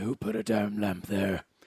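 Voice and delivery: very deep, slow, rumbling low voice. Quoting a man complaining about a lamp, in a Batman voice. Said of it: "he's got a really deep voice ... he was like Batman".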